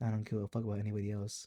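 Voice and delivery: low, quiet, fast, dismissive monotone.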